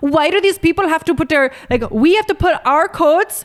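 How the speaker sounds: shaky attempted Irish accent. Retelling what passengers on a plane said, attempted irish accent. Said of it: "I'm trying to do Irish".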